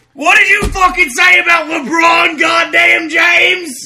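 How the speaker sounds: furious, very loud, very high raging scream. Hearing LeBron James insulted, a Cavs fan shouts back: screaming angrily. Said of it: "You just screamed to me".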